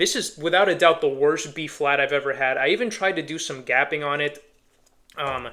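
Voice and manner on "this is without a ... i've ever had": normal talking voice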